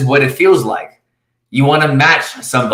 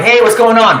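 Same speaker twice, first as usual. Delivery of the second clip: full-energy, pitched-up, very high-energy voice; 9 semitones higher than usual. Demonstrating picking up the phone to a caller: energy level of a ten. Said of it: "this guy's like a ten".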